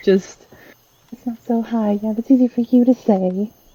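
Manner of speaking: grumbled, muttered under the breath. Acting out Pippa's reply when told the climb isn't high: muttering under her breath. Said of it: "she just mutters something under her breath".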